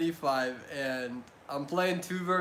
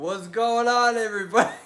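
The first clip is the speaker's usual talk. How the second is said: loud speech with chuckling laughter; 5 semitones higher, 5 dB louder than usual. Greeting everybody at the start, laughing while talking. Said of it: "I'm laughing because I'm an idiot".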